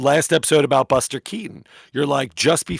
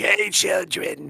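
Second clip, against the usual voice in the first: put-on raspy voice, higher; 5 semitones higher, 3 dB quieter than usual. Showing how to greet the children at the elementary school: Harvey Fierstein voice. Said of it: "I'm gonna be like Harvey Fierstein".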